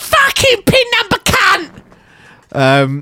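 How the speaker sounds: put-on spitting tirade. Mimicking a woman who calls them pin number, imitating her spitting rant. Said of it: "Such an accurate rendition of how she spits".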